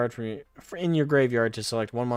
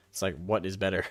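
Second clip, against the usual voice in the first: normal talking voice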